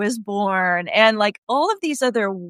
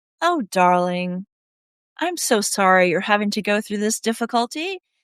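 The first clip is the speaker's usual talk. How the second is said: put-on gentle, nurturing grandma voice. Retelling how a teacher spoke to herself: imitating a nurturing grandma voice. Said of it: "that sounded like the most nurturing grandma ever".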